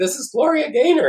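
put-on screaming out to the room, very high. Retelling a man screaming to everybody: imitating someone screaming. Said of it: "he starts screaming to everybody".

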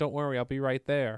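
normal talking voice

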